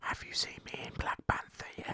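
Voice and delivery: hushed whisper under the breath. Recalling whispering to a scene partner during a silent moment on set, whispered. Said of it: "I whisper".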